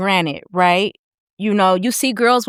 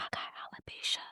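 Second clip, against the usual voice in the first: put-on whisper, quieter. Retelling what a lady at the VA said: imitating someone whispering. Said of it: "she was whispering".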